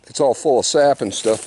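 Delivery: plain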